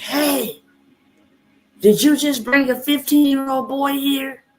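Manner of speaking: very high, shrill, far-carrying yell. Retelling calling across a parking lot to a paramedic: imitating her own yell. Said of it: "I yelled across the parking lot".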